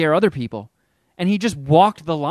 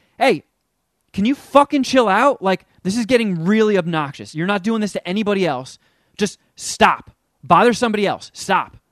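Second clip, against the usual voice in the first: mock harsh voice, higher pitch; 3 semitones higher than usual. Telling a story, the speaker acts out a woman laying into a man: retelling her telling him off. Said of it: "she laid into him".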